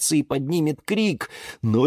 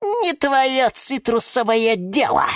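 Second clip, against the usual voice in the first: haughty, huffy little snort, pitched up; 6 semitones higher than usual. Reading a tale, she snaps back at the one scolding her: snorting. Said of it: "фыркнула на него гордение Евгения".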